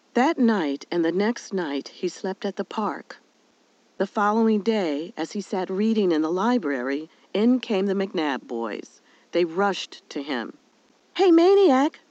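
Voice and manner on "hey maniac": sudden, very high blurted words. One of the boys rushes up to him in the library, blurting it out. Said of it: "blurted Piper".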